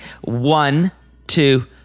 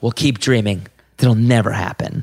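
blunt, tough put-on voice, pitched lower; 4 semitones lower than usual. Retelling a therapy clip: imitating a tough-love therapist. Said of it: "real tough love therapy session".

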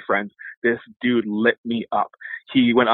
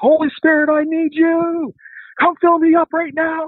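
mock shrieking, very high, loud, drawn-out screaming; 5 dB louder than usual. Retelling a drunk man's prayer in a transit station: imitating someone screaming.

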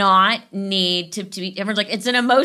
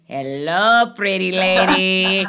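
drawn-out infant voice done by a woman; 3 semitones lower than usual. Showing how they used to give friends' babies a voice. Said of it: "I would pick them up and give them a voice".

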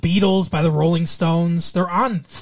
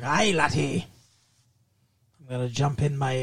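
put-on Scottish accent; 4 semitones lower, 6 dB quieter than usual. Recalling the cartoon DuckTales, imitating Scrooge McDuck: Scrooge McDuck Scottish accent. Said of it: "he had the, the accent".

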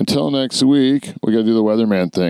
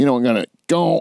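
put-on honking sound in word; 3 semitones higher than usual. Imitating how a discussed man talks: imitating a honk mid-word. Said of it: "there's a honk in the middle of it".

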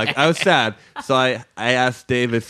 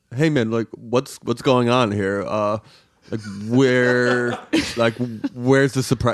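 stammering, halting, puzzled, filler-laden, lost-sounding voice. Retelling a friend's words at a party: Dave impression. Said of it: "if I'm doing a Dave impression".

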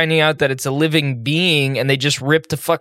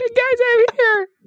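tiny shrunk person voice, pitched higher. Imagining a friend shrunk tiny, clinging to the microphone: imagining Jan as a tiny shrunk person. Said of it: "he got shrunk ... and is like".

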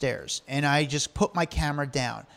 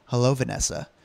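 grave, earnest, dead serious tone; 3 semitones lower than usual. Retelling a greeting at a girl who came out: dead serious greeting. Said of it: "I just dead serious".

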